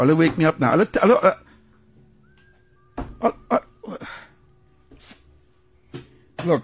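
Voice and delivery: breathy near-whisper, overcome with emotion. Breaking off a political editorial to a co-host: getting emotional. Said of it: "I get emotional".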